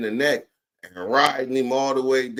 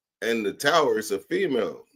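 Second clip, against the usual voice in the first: usual speaking voice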